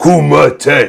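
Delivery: yelled high and loud. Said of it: "he'll yell".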